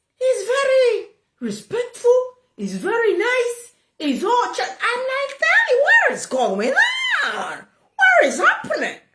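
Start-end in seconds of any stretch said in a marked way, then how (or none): 5.4-9.0 mock bewildered, high, swooping pitch. Retelling own reaction to Daddy being nice: retelling own confused question. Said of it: "I'm confused".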